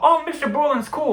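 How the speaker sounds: very high, astonished, surprised cry. Retelling a friend's reaction to the teacher's story: imitating Ben's surprised tone. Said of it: "surprised tone I've ever heard him".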